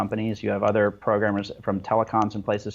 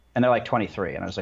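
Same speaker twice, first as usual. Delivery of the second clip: normal talking voice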